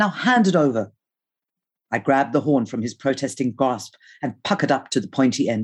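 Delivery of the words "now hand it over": ordinary delivery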